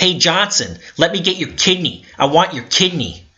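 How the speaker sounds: shrill, high-pitched, screamed yelling. Speaker reenacts screaming at someone he followed around, retelling a scream. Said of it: "and then I'm screaming".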